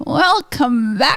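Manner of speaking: put-on little old lady voice. Mimicking how the other speaker sounded: imitating an old lady voice. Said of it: "You sounded like an old lady".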